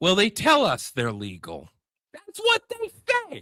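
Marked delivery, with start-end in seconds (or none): 2.1-3.4 heated, excitable rant, swooping and rising pitch. Quoting what Smithfield and Tyson workers say, yelling. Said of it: "I don't know why I'm yelling".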